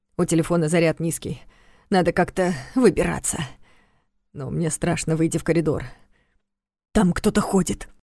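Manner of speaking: plain reading voice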